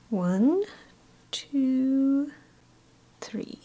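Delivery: high cartoon owl voice, long drawn-out "two". Counting to three while painting flowers: Tootsie Roll Pop Owl voice. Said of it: "Do I sound like the Tootsie Roll Pop Owl?".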